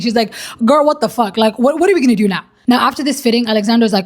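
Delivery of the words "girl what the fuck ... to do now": put-on panicking voice. Retelling a bride's reaction to a dress that doesn't fit: imitating someone panicking. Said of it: "she's actually full on panicking".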